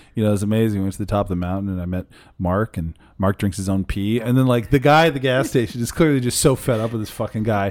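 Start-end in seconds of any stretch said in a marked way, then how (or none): 0.3-4.2 bone-dry, low, flat deadpan delivery. Retelling what a man told a gas station worker, imitating Nathan's deadpan. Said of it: "doing like the typical Nathan like deadpan thing".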